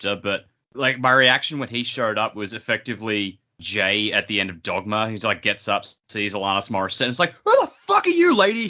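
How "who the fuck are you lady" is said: really angry outburst, pitched very high. Retelling a reaction to a new character by quoting Jay: imitating Jay, really angry. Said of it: "really angry".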